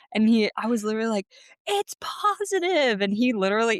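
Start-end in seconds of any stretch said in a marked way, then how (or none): 1.6-3.0 put-on very high, thrilled scream. Retelling bursting through the door with the news: retelling own scream. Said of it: "why you were screaming".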